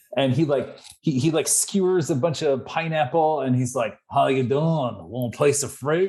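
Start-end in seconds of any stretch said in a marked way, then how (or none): 4.1-6.1 bouncy, weird, jaunty Australian twang. Retelling what a character in a nineties episode said, in a jaunty Australian accent. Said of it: "weird, jaunty um, Australian accent".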